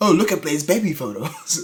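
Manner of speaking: doting, showing-off, overly proud parent voice. Joking about an overly talkative character: imitating an overly proud parent. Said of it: "like that really overly proud parent".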